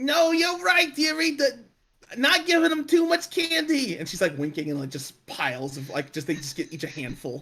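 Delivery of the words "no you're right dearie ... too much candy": put-on very high, drawn-out, old lady New York accent. Acting out a woman handing out candy, in an old lady New York accent. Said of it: "old lady and New York accent".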